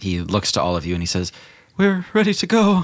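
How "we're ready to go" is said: out of breath, pitched very high. Game master voicing a character telling the party they're ready, out of breath. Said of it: "he is out of breath and covered in sweat".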